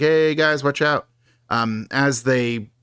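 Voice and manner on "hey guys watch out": plain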